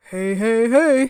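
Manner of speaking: very loud, big, booming cartoon voice. Retelling a Sunday afternoon exchange, the speaker greets like Fat Albert. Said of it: "like Fat Albert".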